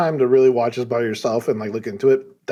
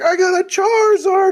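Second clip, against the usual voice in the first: mock tearful, excited crying child voice, higher, louder; 5 dB louder than usual. Retelling a kid who got a charizard: imitating a crying kid. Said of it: "He's crying".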